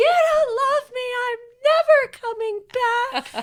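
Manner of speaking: put-on, very high, shrill, top-of-lungs hollering. Retelling a child running out yelling to the neighbors: imitating a child yelling.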